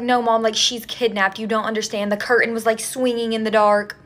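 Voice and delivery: ordinary delivery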